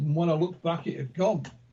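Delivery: normal talking voice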